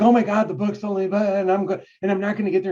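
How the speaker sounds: anxious, worried fretting. Retelling first starting to write: imitating own past worry. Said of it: "I was worried".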